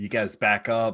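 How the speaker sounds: plain reading voice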